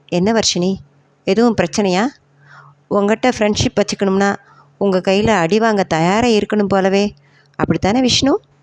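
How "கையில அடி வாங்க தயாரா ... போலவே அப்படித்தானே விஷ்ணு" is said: ordinary delivery, nothing marked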